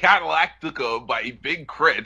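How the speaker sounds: slow delivery with oddly twisted, bent phrasing. Naming an album, attempting a horrible Christopher Walken impression. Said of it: "That was my Christopher Walken impression".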